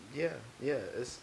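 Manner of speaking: smooth radio announcer voice. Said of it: "What is this voice that you're putting on right now?".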